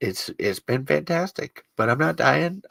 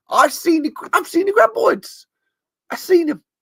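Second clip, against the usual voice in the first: very high with a light Australian accent. Insisting they have seen the graboids: put-on Australian accent. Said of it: "It was a little Australian".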